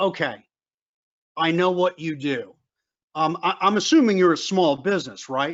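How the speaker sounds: normal talking voice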